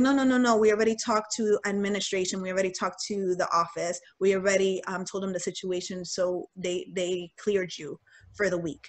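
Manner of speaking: usual speaking voice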